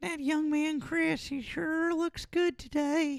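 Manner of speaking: very high cartoon character voice. Speakers agree someone sounded like Herbert from Family Guy; Herbert from Family Guy voice. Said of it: "Herbert from Family Guy".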